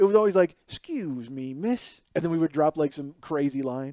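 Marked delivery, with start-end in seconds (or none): 0.7-2.0 soft, low-key, put-on flirtatious voice. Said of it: "voice of [name]".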